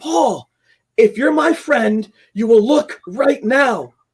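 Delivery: insistent calling out, high-pitched and slow. Retelling trying to wake a sleeping friend, retelling own yell. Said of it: "And I yelled".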